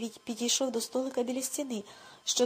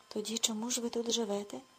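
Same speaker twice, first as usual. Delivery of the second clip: ordinary delivery, nothing marked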